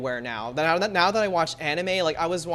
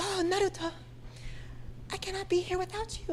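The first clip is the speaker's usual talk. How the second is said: put-on forced girly anime voice, thick breathiness, soft whisper; 9 dB quieter than usual. Mocking how anime girls are voiced, forced hyper-feminine Hinata voice. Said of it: "very like hyper feminine, but it sounds very forced".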